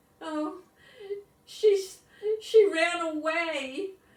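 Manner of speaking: very high, trembling, shaky voice with a stammer. Ben answers the boys when they ask what happened to Lucy, in a shaky voice. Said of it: "Ben said in a shaky voice".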